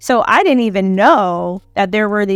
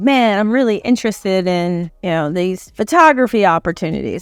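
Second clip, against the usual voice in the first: ordinary talk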